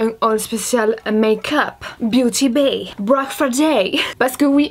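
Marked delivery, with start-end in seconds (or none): 2.0-4.7 slow, put-on English accent. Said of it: "cet accent anglais".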